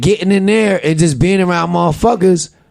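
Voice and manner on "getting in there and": usual speaking voice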